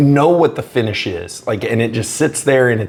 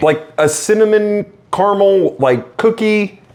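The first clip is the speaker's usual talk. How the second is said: a little excited, carried away, gushing with lifted voice; 8 semitones higher than usual. Describing the smell of a strong whiskey to another taster: getting a little excited. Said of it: "sorry, I'm getting a little excited".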